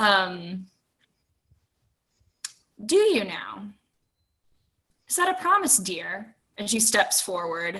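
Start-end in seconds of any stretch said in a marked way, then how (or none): 0.0-6.4 half-smirk carried in the voice. Narrator voices a woman who answers and steps forward, with a half smirk. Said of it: "curls into a half smirk".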